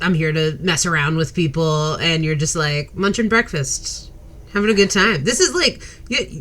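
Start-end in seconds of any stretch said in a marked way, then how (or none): none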